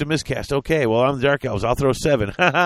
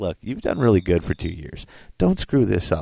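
very low, condescending, talking-down tone; 7 semitones lower than usual. Speaker imitates the people who are really condescending: mock-condescending. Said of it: "the people who are really condescending".

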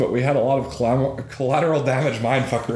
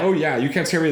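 plain

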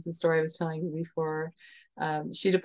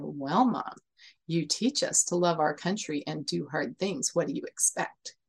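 put-on snarky tone, quieter; 4 dB quieter than usual. Mother retelling her daughter's answer about joining the military, imitating a snarky tone. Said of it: "a very snarky looking face and a snarky tone".

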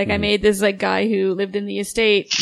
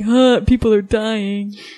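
slow, drawn-out, unfazed dude voice. Wondering whether guys watch horror films together, imitating guys watching horror. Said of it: "so they can all be like".

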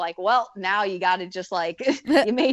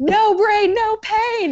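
mock very high, slow, drawn-out, loud scream; 14 semitones higher, 6 dB louder than usual. Retelling what the coach yelled during a race: imitating John screaming. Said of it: "John just screamed".

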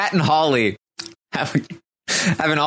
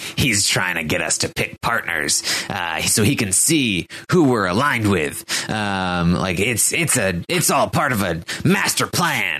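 low, sinister, evil fairy-tale witch voice; 4 semitones lower than usual. Retelling Christy's theory about the new guy, imitating Christy as an evil witch.

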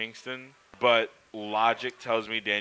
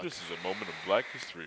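soft, faked bass voice; 4 semitones lower, 7 dB quieter than usual. Showing another speaker how to do the voice, in a put-on deep voice. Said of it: "do the voice deep voice".

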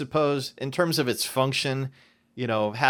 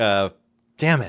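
ordinary talk

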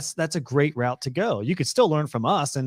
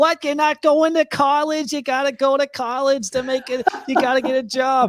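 put-on shrill, raised old woman voice; 11 semitones higher, 5 dB louder than usual. Acting out how your grandma would react, do a Grandma Edna impression. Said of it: "That's just how my grandma sounds".

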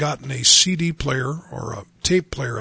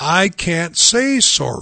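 mock very slow, loud, swooping little girl's scream; 4 semitones higher, 4 dB louder than usual. Retelling a little girl's outburst over saying sorry: imitating a little girl screaming. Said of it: "She finally screamed out really loud".

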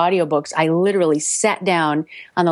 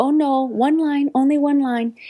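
high, slow, careful, halting English. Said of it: "And she said".

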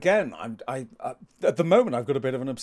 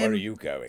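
very low voice, faintly menacing; 9 semitones lower, 3 dB quieter than usual. Joking with another speaker about sounding threatening: put-on tint of menace. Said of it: "with a tint of menace".

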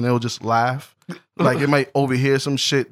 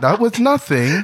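high-pitched voice like a robot assistant; 7 semitones higher than usual. Joking about a laugh sound, answering as the voice assistant in an Alexa voice.

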